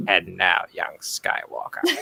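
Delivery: breathed-out whisper. Recalling a morning their voice sounded like the Emperor, Star Wars Emperor impression. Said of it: "I sounded like the Emperor from Star Wars".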